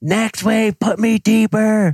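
thrilled, very high-pitched, drawn-out excited yell. Retelling what he yelled on the sled after a wave, as an excited yell. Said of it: "I'm yelling".

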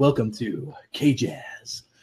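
deep, raspy announcer voice. Speaker at the mic puts on a radio voice to woo Scooter: deep raspy radio voice. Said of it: "We'll get that deep raspy radio voice".

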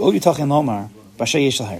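ordinary delivery

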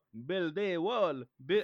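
fake, hard-to-place European accent, loud and high. Joking about building a wall: put-on European accent. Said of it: "I don't know what European accent that is".

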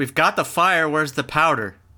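shouting. In a tabletop game, a player speaks as their character Romeo, shouting. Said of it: "Romeo shouts".

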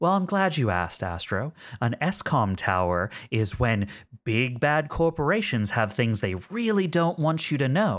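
smug voice with a smile through every word. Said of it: "there's a smile in their voice".

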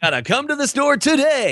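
very high, cheesy, salesy commercial announcer voice. Explaining the voiceover industry, demonstrating how commercials sound in a commercial announcer voice. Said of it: "they sound like this".

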